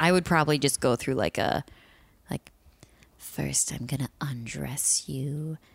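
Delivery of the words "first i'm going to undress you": hushed, very quiet, slow storybook witch voice. Asked what they would say, speaker improvises a line in a witch voice. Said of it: "You sound like a witch".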